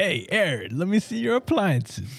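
high fake New Jersey accent. Recounting a visitor asking to see appliances, voicing Gorbachev with a New Jersey accent. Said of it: "I just imagined Gorbachev grew up in, like, you know, New Jersey".

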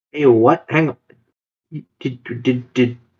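stuttering, stammering, audibly disbelieving. Interrupting another speaker who just gave a number; stuttering in disbelief. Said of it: "I'm stuttering".

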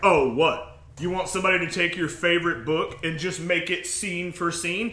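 put-on cocky attitude. Imitating what some people say, with a mimicked cocky attitude. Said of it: "they say it with almost this cocky air of attitude".

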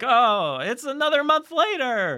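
very high-pitched voice, words stretched out slowly. Retelling own usual words about time passing: Seinfeld voice. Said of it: "I don't know why I sound like Seinfeld there".

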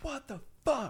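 shrill, outraged, furious scream, very high. Finding a boot on their car, the speaker retells a scream. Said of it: "walked out and screamed".

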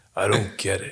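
low, calm, somber put-on voice. Imitating an actor's calm, somber way of talking. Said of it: "Keanu Reeves always talks like that".

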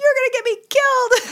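very high, loud, rushed, upset outburst. Retelling what they shouted at him as he ran to his bed, acting upset. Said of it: "I was like so upset".

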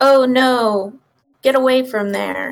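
put-on dry, expressionless, flat deadpan delivery. Describing an actor's lines whenever the kids disappeared, imitating his deadpan line delivery. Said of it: "and just like really deadpan".

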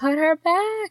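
very high, panicked, freaked-out outburst. Retelling how Ray reacted when someone played with her doll, imitating Ray freaking out. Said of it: "And Ray is freaking out".

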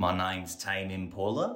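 playful put-on New Zealand accent. The others ask to hear the accent you do, so show it: put-on New Zealand accent. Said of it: "a decent New Zealand accent that he does".

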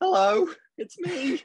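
very high, squeaky, pitched way up. Teasing the co-host by imitating his usual greeting: imitating John. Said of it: "every time just being like".

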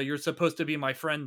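ordinary delivery

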